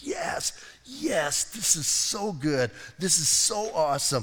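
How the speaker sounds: acted thrilled, gushing, excited, drawn-out delight. Preaching on Paul's letter, acting out his joy: imitating Paul being excited. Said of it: "And he is so excited".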